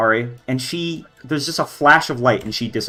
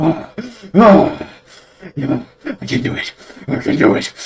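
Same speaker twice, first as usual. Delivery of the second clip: all-out high, drawn-out frantic yelling; 6 semitones higher, 3 dB louder than usual. Voicing a character running past the party: yelling at the top of his lungs. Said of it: "yelling at the top of his lungs".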